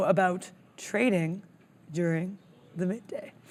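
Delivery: doom-laden, portentous, ominous, foreboding delivery. Presenting a trading video to viewers, introducing the next topic in an ominous voice. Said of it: "I said it in such an ominous voice".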